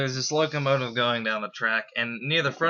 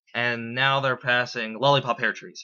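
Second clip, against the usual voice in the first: plain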